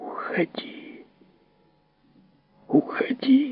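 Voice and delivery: shouting in a hushed whisper. He orders another man to go away, in a shouted whisper. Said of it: "крикнул он шепотом".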